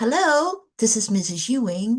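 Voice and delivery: professional phone voice. At a training, recalling a grandmother answering the phone, in Mrs. Ewing's professional phone voice. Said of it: "That professional voice".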